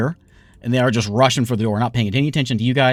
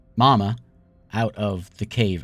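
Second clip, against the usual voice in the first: usual speaking voice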